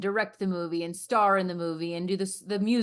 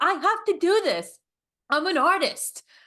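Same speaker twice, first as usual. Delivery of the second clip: put-on Bronx accent, very high and slow; 11 semitones higher, 6 dB louder than usual. Retelling what she said when her corner told her not to, in a bronx accent. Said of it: "that was a really good impression".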